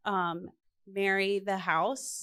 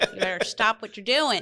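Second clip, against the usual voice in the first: articulate classroom teacher voice, lower tone, enunciated, slightly southern; 6 dB louder than usual. Asked whether they have a teacher voice, a former teacher shows their teacher voice. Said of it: "Do you have the teacher voice?".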